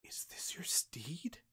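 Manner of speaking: very soft, amazed whisper full of wonder. Narrating a character who takes the listener's hands and asks a question, whispering. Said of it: "takes your hands and like whispers".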